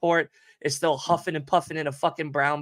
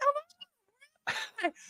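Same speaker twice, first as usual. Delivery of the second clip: play-acted very high shriek of pure terror; 9 dB quieter than usual. Retelling panic on a turbulent flight: imitating own past scream. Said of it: "I'm screaming".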